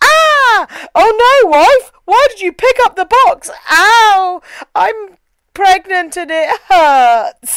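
parody of stiff, wooden delivery. Retelling a horror movie scene with a pregnant wife: mocking bad movie acting. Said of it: "You can't act".

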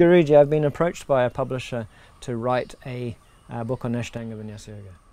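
ordinary talk

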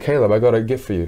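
ordinary talk, nothing marked

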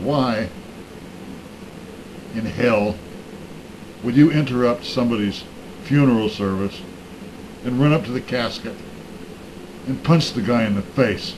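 ordinary talk

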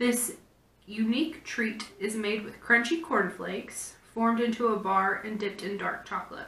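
plain

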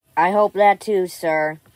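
loud, mechanical, robotic ai-assistant voice. Robot One answering the one it calls sir, in a Robot One AI voice. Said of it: "I hate this new AI voice".

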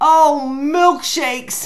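very loud, high, dazed cow crying out. Reading a story aloud, the cow crushed under the haystack gives a dizzy cry. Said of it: "cried the very dizzy cow".

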